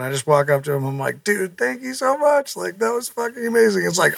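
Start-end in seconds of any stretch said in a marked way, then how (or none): 1.2-3.8 high, put-on sniffling, fighting back tears. Retelling thanking someone backstage after a show: retelling own tearful words. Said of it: "I'm fucking sniffling and, like, fighting back tears".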